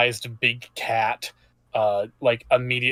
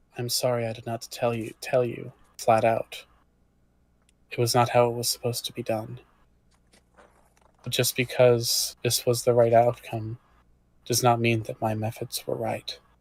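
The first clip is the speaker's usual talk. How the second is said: very quiet, hushed, barely raised, held-down delivery; 5 dB quieter than usual. Voicing a big cat character apologizing to a player: speaking very quietly. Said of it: "she says very quietly".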